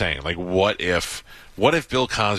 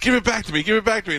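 shrill, high, pitched-up yell. Retelling how a man yelled at the people on the bus, retelling a yell. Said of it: "he's yelling at the people on the bus".

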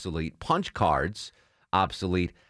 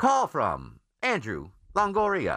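computerized female announcer voice, like an automated phone; 7 semitones higher than usual. Imitating a phone's caller id announcing who's calling, computerized woman's voice. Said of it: "in this computerized voice, this woman's voice is like".

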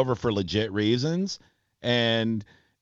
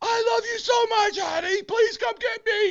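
put-on very high screamed yell. Recounting a police standoff, acting out the man screaming to a woman, retelling a man screaming. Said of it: "the guy's just screaming".

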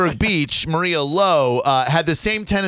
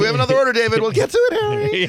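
two voices played as a happy couple; 8 semitones higher than usual. Imagining the company founders chatting as a happy couple: voicing Harry and David as a happy couple.

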